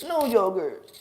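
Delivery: put-on high, loud voice of a three-year-old. Imitating a three-year-old child: little kid voice. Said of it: "That's how my son talks".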